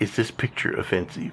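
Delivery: ordinary talk, nothing marked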